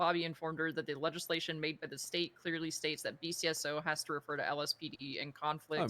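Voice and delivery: ordinary talk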